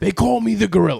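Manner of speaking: gruff, raspy, loud tough-guy wrestling-promo half-yell. Retelling how a man his dad met introduced himself, Mr. T voice, almost yelling. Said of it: "like almost like he's yelling at you".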